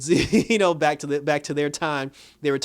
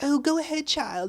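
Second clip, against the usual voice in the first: put-on very high little old lady voice; 12 semitones higher than usual. Complaining about a show, the speaker imitates Mary Shazam sounding like a little old lady. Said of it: "she was talking kind of like a little old lady".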